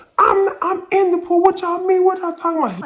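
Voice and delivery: very loud, shrill, high-pitched arguing yell. Retelling how a friend insisted he was in the pool, imitating someone yelling. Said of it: "He's starting to yell".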